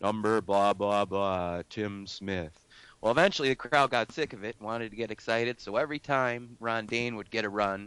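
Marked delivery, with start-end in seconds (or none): 0.0-2.6 slow, flat, level monotone announcer drone. Retelling the stadium announcer after every play, monotone announcer voice. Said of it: "he was really monotone".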